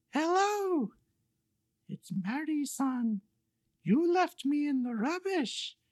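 tiny, high and soft voice. Telling a story, voicing the caller on the phone: Mary-san voice. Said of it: "I'm doing voices now".

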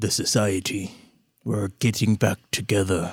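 close, hushed whisper. A character crouches down to a player, whispering in their ear. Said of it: "he kind of whispers in your ear".

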